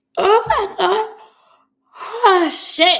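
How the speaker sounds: very loud, very slow, drawn-out yawned words. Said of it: "I can't stop yawning".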